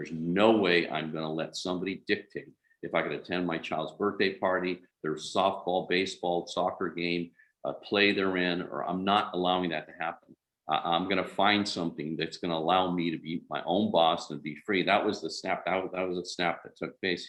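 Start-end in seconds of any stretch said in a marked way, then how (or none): none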